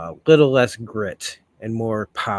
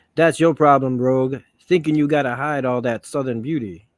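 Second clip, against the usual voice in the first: normal talking voice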